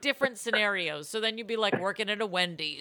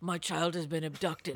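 intense put-on movie-star voice, lower and quieter; 5 semitones lower, 6 dB quieter than usual. Imitating Liam Neeson coming at you: intense Liam Neeson impression. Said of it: "he comes at you with this hunch".

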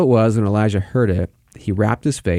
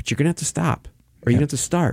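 calm, gentle fatherly voice, pitched higher; 5 semitones higher than usual. Describing how a father corrects his kids without shouting, imitating a father not shouting. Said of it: "the voice of a father who's not shouting".

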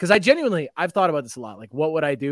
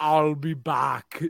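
voice sounding as if throat is stuffed; 3 dB quieter than usual. Asked on the spot for an impression: Arnold Schwarzenegger impression. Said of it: "give me your best Arnold Schwarzenegger".

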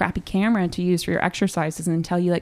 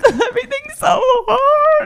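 very high, loud, tearful crying wail; 6 dB louder than usual. Recalling walking down Houston as a struggling acting student, retelling her own crying. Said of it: "crying on the streets".

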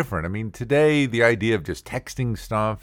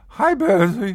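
nervous voice cracking up very high; 11 semitones higher, 5 dB louder than usual. Retelling being too shy to talk to a girl: imitating his voice cracking. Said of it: "my voice would crack".

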